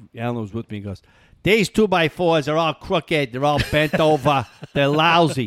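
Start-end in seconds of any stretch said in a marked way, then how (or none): 1.5-5.5 put-on heavy New Hampshire accent, higher and louder. Retelling a friend's complaint about crooked boards: imitating Alan's heavy New Hampshire accent. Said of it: "your heavy New Hampshire accent".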